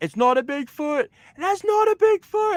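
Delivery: high-pitched scream. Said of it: "and then he screamed".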